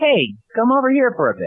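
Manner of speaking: tiny, very high, sing-song little voice. Retelling how a voice from the corner called two disappointed fans over, little voice. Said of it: "a little voice saying".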